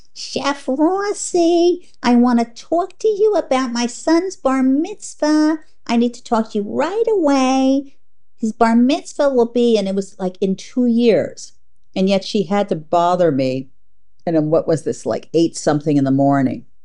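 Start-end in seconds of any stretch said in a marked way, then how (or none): 0.2-9.8 very high, complaining, kvetchy woman's whine. Retelling a woman's morning call that woke the speaker: imitating a kvetchy woman. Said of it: "this kvetchy female voice going".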